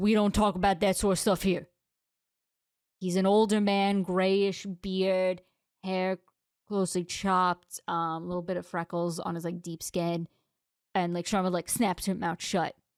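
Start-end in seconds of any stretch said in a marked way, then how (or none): 0.0-1.7 rushed, acted, quick delivery with a mild suggested boom. Retelling how one of the players stood up and spoke, booming voice. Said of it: "in a booming voice just goes".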